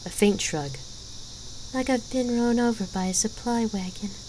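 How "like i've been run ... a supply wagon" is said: plain, honest, sincere tone, slightly high pitched. Gabrielle answers the warrior asking how she feels, softly. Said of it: "Gabrielle admitted softly".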